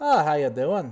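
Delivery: loud, high voice with a faint Irish lilt. A game master voices Firo greeting the bar wench, Firo voice, slightly Irish. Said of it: "Still sounds a little Irish".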